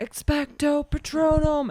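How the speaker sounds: very loud, booming, high shout. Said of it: "When we saw that Harry Potter".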